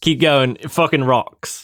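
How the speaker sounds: put-on mimicked British accent. Repeating a friend's lines to match their voice, imitating friend's british accent. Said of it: "I'll try to match".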